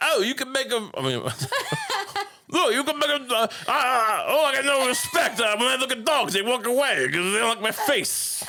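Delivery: impression, pitched way up, complaining, whining.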